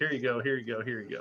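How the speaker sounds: put-on soft, rote, mechanical patter on autopilot. Acting out people at networking events handing out cards, imitating a rote automatic reply. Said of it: "almost like automatic response".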